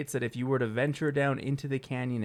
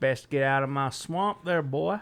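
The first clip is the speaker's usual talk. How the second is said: put-on southern creature drawl; 3 dB louder than usual. Playing an imagined Southern Sasquatch in the woods, with a Southern Sasquatch drawl. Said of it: "It's got more of a drawl".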